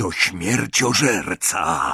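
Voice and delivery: hushed whisper. Griphook speaks up after Travers stops near Hermione, whispering. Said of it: "Szepnął Gryfek".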